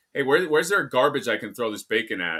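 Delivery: mock sweetly polite, pointed, passive-aggressive tone. Retelling a question to a counter worker about throwing away bacon: imitating own passive-aggressive tone. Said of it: "here was my passive-aggressive thing".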